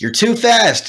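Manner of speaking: put-on yell, pitched very high. Retelling what the jazz band teacher would always yell: imitating the teacher yelling. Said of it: "the teacher would always yell".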